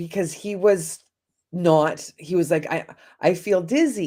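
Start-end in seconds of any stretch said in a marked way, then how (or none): 2.7-4.1 put-on heavy Italian accent, slower. Retelling what their eighty-eight-year-old father-in-law said, in a strong Italian accent. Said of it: "very, very strong Italian accent".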